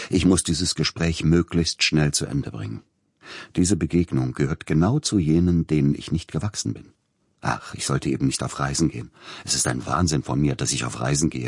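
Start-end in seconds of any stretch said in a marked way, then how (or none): none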